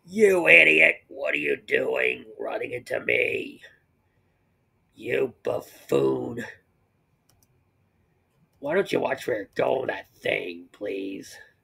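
low, rough, barking rant. Voicing Robotnik yelling at someone who ran into him: Robotnik voice. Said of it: "and Robotnik's like".

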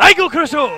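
Japanese-style acted voice. Speaker performs fight commentary in their japanese voice acting. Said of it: "It is my Japanese voice acting".

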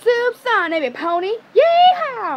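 very high character voice, swooping around. A speaker shows off the voices she can do, starting with Applejack's voice. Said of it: "I can do AppleJack's voice".

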